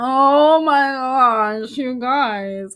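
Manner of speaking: put-on sarcastic delivery. Repeating another speaker's line from a clip: imitating a sarcastic tone. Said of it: "Doesn't she sound sarcastic?".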